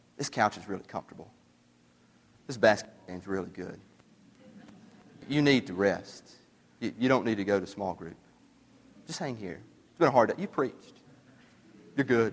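very quiet half-whisper, barely above breath. Acting out the devil tempting the preacher to skip small group: Satan half-whispering. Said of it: "He whispers".

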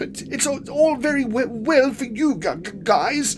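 gasped out. Struggling to swim while clutching his spellbook, Quilby speaks to the others, gasping. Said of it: "he gasped".

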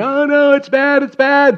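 play-acted very high, drawn-out children's screams of alarm. Retelling a phone call when kids outside started screaming: imitating kids screaming. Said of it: "kids start screaming".

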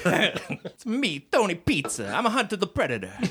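put-on Italian accent, pitched a bit high. Right after telling the guys no more Italian accents, he introduces himself: Tony Pizza Italian accent. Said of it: "No more Italian accents".

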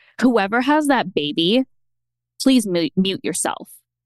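usual speaking voice

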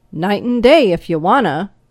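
brusque. Roy answers the narrator's question about working hours, curt. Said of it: "was his curt response".

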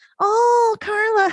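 very high-pitched, theatrical, practiced moan. Telling about a man's practiced theatrics, imitating his high-pitched moan. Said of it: "he would just like go in real high pitch".

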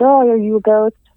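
put-on teasing, disbelieving, sarcastic tone. Retelling how he asked the automated writing questions: retelling a mocking question. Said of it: "kind of like mockingly being like".

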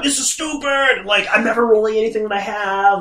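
put-on angry grumbling. Retelling the wife's complaint about a dice game: imitating someone mad. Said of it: "She was so mad".

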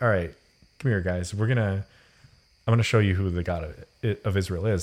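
ordinary talk, nothing marked

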